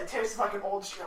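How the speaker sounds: normal talking voice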